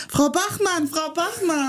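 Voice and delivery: high-pitched shouted call.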